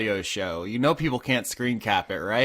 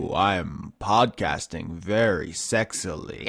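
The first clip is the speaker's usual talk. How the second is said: really deep, macho, manly put-on voice; 4 semitones lower than usual. Teasing a co-host about how they sometimes sound on the podcast, in a really deep manly voice. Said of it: "sometimes your voice is like really deep and manly".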